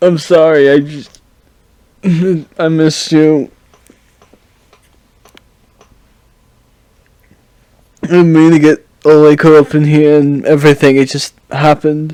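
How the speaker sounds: sobbing, tearful, crying through the words. Voicing a character who drops to his knees: crying in character. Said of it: "he proceeds to start crying".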